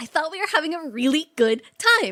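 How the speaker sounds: full-on shrill, loud shrieking tantrum. Retelling a movie scene where she stomps her foot: imitating a screaming tantrum. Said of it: "Starts screaming".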